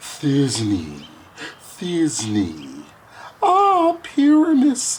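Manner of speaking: tiny, swooping, sing-song, slow, drawn-out voice. A player who begged to play Thisbe too speaks her lines, in a monstrous little voice. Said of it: "I'll speak in a monstrous little voice".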